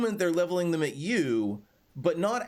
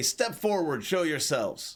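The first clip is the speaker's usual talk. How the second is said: rough, gruff voice. A narrator voices someone calling out from the bushes, in a gruff voice. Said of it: "a gruff voice say".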